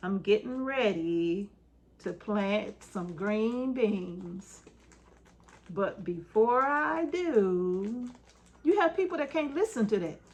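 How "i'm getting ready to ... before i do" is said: very slow dragging speech, do stretched out. Explaining how some people talk, demonstrating talking very slowly. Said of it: "people that talk slow, like".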